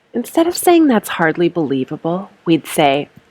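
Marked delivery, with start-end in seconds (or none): none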